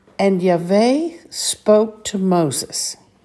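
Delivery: slow, deliberate reading. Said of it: "as I say it slowly".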